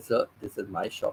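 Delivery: quiet, soft, hushed whisper. Retelling how the shop owner quietly revealed the shop: imitating a quiet whisper. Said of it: "Quietly, he whispered to me".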